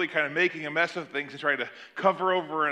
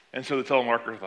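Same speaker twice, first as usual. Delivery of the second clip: ordinary talk, nothing marked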